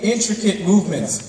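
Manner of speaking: stress on "intricate". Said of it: "I need to emphasize this word".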